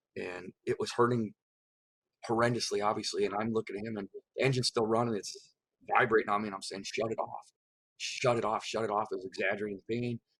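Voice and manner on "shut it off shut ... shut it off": ordinary talk, nothing marked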